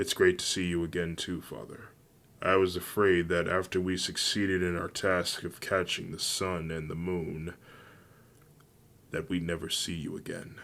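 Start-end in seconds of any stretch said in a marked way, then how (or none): none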